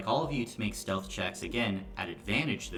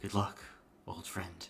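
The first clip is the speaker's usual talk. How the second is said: put-on near-whisper, quieter and faster; 4 dB quieter than usual. As the group sneaks out, the speaker voices Carson's farewell: imitating Carson barely whispering. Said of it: "barely above a whisper say".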